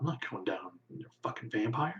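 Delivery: very hushed, quiet grumble under the breath. A game narrator voicing the third guard, muttering under his breath. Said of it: "mutter under his breath".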